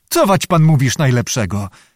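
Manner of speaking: plain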